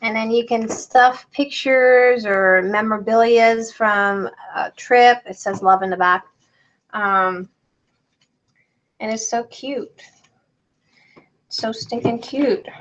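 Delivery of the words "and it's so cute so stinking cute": tearful, breathy whisper, crying through the words. Showing a cute fabric envelope to viewers, crying while talking. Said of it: "Crystal, don't cry".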